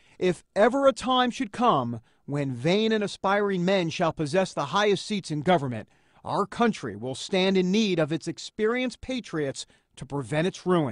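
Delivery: ordinary delivery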